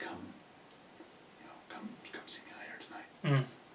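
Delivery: very quiet whisper muttered under the breath. Voicing a character who invites a player to come later: said under his breath. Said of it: "he'll kinda under his breath".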